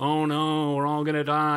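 low, gloomy moan. Recalling a cartoon character who frets all the time, Gulliver's Travels doom-moaning impression. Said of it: "And he just does this the whole cartoon".

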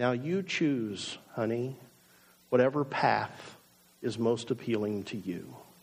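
very soft, low, tender affectionate voice. Acting out someone laying out all the options in front of others, in a very soft voice. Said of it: "say in a very soft voice".

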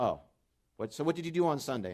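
loud, snide, mocking, sarcastic tone. Retelling a coworker's mocking question in the break room: imitating a sarcastic coworker. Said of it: "her friend with sarcasm says".

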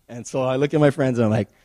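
ordinary delivery

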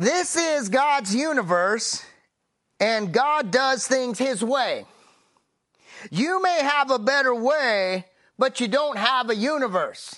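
put-on funny, goofy country accent, laid on thick. Quoting how Vernon McGee sounds in the speaker's head, Vernon McGee impression. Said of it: "he's got this really funny voice and I'm going to do my accent".

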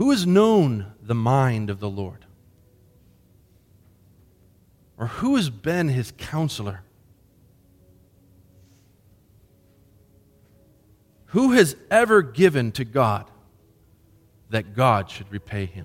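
slow measured reading, phrase by phrase. Reading a scripture passage aloud for listeners to ponder: reading slowly, phrase by phrase. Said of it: "I'm gonna read it slowly".

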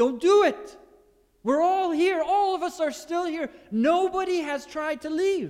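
loud shouted words. Retelling a jailer about to draw his sword: imitating Paul shouting. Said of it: "and Paul shouts out".

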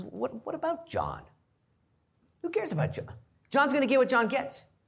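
very high, swooping, sing-song sarcastic voice. Retelling a story of Jesus answering Peter about John, mock-sarcastic retelling. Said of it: "he begins to kind of get sarcastic".

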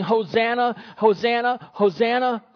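ordinary talk

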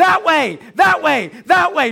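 put-on child voice hollering, high, loud and rough. Retelling a daughter yelling at the tv during a game: imitating a child yelling. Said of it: "she just starts yelling at the T V with me".

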